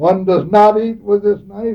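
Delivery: very loud, high-pitched, stern voice. Speaker recalls a man disciplining students at table, retelling his loud tone. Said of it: "he said in a loud tone of voice".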